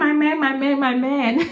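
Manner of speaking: put-on screaming. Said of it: "I'll start screaming".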